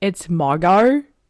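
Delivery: put-on with an Australian accent. Quoting a woman saying her name, in an Australian accent. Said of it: "she has like, you know, that Australian accent. So she's like".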